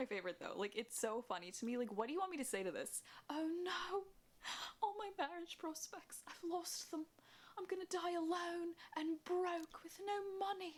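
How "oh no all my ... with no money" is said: British-sounding voice, very high pitched. Mocking a comment about lost marriage prospects: mock british accent. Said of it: "British for a second".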